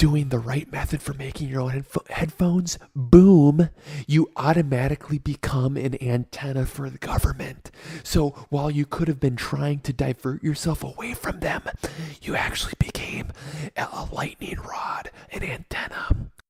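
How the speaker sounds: forceful, loud, projected yelling whisper. After promising to whisper louder, the speaker continues in a yelling whisper. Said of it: "It'll be kind of a yelling whisper".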